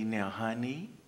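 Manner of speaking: gentle, tender, soft and loving motherly voice. Retelling how a loving mother spoke to her child: imitating a mother speaking softly. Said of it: "she spoke to you softly".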